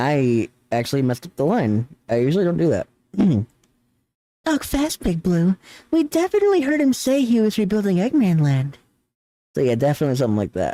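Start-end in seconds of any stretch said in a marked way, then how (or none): 4.4-8.8 very high put-on feminine character voice, top of register. Speaker redoes a flubbed line in the Rouge voice they came up with: high female-sounding Rouge voice. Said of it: "my very high registry, and I'm like putting on a female sounding voice".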